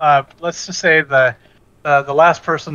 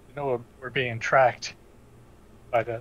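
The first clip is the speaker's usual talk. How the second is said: very quiet hushed voice, quieter; 3 semitones lower, 9 dB quieter than usual. Warning the party that they are being tracked: speaking very quietly. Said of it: "I'll say very quietly".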